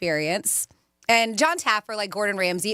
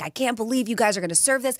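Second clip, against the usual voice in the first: rushed, indignant, exasperated rant; 2 semitones higher than usual. Telling how a man yelled at the kitchen over an ordered item, retelling a yell. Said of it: "he's yelling at them".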